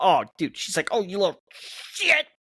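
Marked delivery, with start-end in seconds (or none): 0.9-2.2 driven in as hard as possible, emphatic. Retelling how a grandma said a curse: imitating grandma's emphatic curse. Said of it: "She punched that in as hard as she could".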